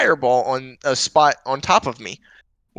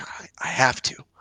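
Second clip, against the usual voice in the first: hushed whisper under the breath; 6 dB quieter than usual. Answering the others in character about helping people: said quietly. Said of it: "I'm gonna say this quietly".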